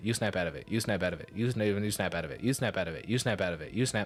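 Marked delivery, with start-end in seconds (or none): none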